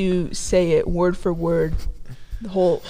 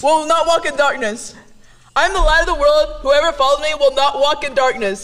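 shouting, higher and louder; 8 semitones higher, 5 dB louder than usual. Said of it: "You are yelling".

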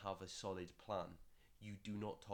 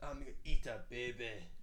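very loud, jeering, exaggerated Scottish accent; 3 semitones higher, 9 dB louder than usual. Joking with a Scottish co-host, the speaker quotes Austin Powers in a mocking Scottish accent. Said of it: "You always do that voice when you make fun of my accent".

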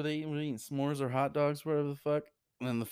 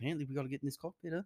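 put-on Australian accent, much quieter; 6 dB quieter than usual. Retelling to friends what someone in a scene said, in an Australian accent. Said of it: "You do a good, Australian accent".

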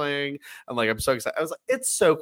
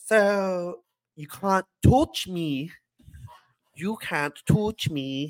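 put-on Canadian accent, much higher; 3 semitones higher than usual. Acting out what the wrestler Trish says in the ring, in Trish's Canadian accent. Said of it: "This Canadian accent".

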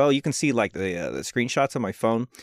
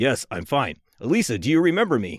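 very deep put-on voice. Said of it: "you're giving Nancy a very deep voice".

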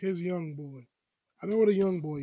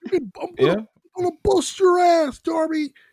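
put-on screaming voice, higher and louder; 11 semitones higher, 11 dB louder than usual. Mocking how Taz screams at Darby during a segment: imitating Taz screaming. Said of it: "Taz just likes screaming".

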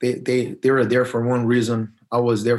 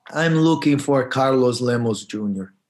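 English with a thick, put-on Italian accent. Retelling a man arriving with four guys, asking for someone: put-on Italian accent. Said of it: "he comes with an Italian accent and say".

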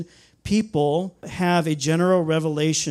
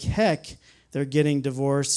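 ordinary talk

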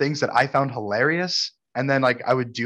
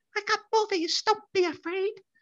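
put-on recorded woman's voice, higher and quieter; 6 dB quieter than usual. Retelling how an older lady selling DVDs talked: imitating her voice. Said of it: "And that's how she sounded".

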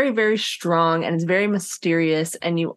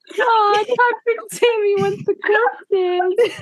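put-on very high, cooing baby talk voice. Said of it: "like a mom talking to her baby".

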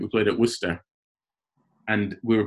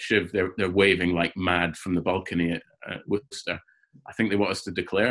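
plain

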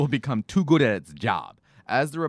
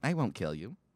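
humanoid robot voice; 9 dB quieter than usual. Retelling a robot's lines from The Tonight Show: imitating Sophia the robot. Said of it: "and she's like".

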